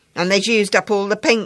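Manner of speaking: very loud, booming, grousing grumble. A boy still stitching away answers his companion, grumbling. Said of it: "grumbled his companion".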